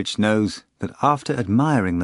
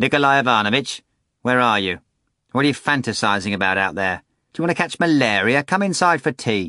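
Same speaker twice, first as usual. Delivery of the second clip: disagreeable, unpleasant female voice, calling out; 3 semitones higher than usual. Narrator voicing a woman calling out from the mansion window, in an unpleasant female voice. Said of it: "an unpleasant female voice will say".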